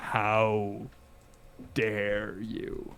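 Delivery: very deep, hushed dragon voice, "how" drawn out. Narrating a game scene, voicing her as she stares at you, very deep, low voice. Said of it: "she says in this deep, deep, low voice".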